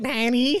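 high, whiny, nasal voice. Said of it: "it sounds quite whiny".

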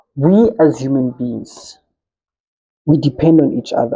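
very slow, deliberate, each word spaced out. Making a point in conversation, announcing it will be said very slow. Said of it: "I'll say this very slowly".

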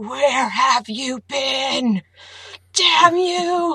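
put-on loud, slow, drawn-out high scream. Imagining a character's voice in one's head: Molly Grue screaming. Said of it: "I heard Molly Gru's voice in my head screaming".

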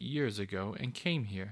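plain reading voice

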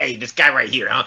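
rat character voice. Brainstorming a rat character, the speaker demonstrates how Eddie talks, Eddie the rat's voice. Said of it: "He talks like this".

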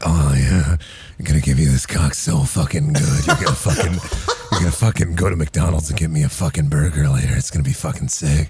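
super fake, very deep, low porno voice. Retelling what gets said in a partner's ear: imitating fake porno talk. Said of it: "super fake porno".

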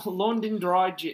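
clumsy, bad put-on English accent. Put on the spot to do an English accent, bad English accent. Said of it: "This is such a bad accent".

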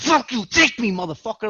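mock fed-up, angry, defiant outburst. Retelling his own panic episodes to friends: imitating his own angry outburst. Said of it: "I'll be so fucking angry".

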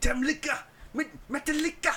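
put-on excited voice. Retelling a video of an Irish fan hearing Metallica is coming, imitating an excited Irish fan. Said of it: "He was getting so excited".

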